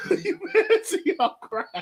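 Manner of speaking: laughing, teasing tone.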